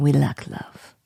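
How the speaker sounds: very low Russian villain accent. Repeating a seven-year-old's phrase aloud, in a mock Russian Bond villain accent. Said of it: "you sound like a Russian Bond vil- villain".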